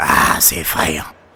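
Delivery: very low, deep, hoarse, raspy dad voice. Retelling what dad said while watching TV, in a big raspy voice. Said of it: "Avec sa grosse voix rauque".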